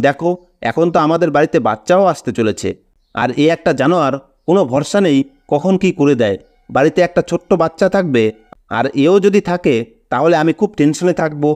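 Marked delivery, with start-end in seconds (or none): none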